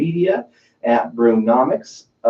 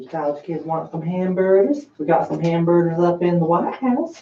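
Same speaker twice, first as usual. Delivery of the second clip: high, put-on cartoon voice; 6 semitones higher, 3 dB quieter than usual. Saying something Trump would tweet, as asked: Herbert voice from Family Guy. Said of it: "anything in the Hubert voice that Trump would say".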